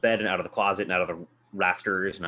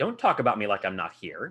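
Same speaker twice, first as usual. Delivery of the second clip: very imperious schoolteacher voice with swooping pitch. Retelling a scene where the creature answers him, in an imperious schoolmarm voice. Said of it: "In this very imperious, like schooled school marm".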